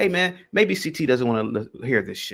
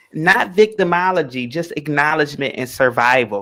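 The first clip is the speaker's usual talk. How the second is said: put-on sassy, attitude-laden delivery; 4 dB louder than usual. Reading a man's message aloud in his voice, put-on sassy voice. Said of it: "I'm going to read his message in his sassy voice".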